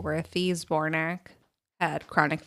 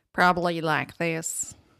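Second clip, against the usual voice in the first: Texan accent, possibly put on. Speaker shows how a foreigner might imitate an American accent: Texan accent. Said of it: "Like a Texan accent?".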